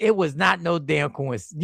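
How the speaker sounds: normal talking voice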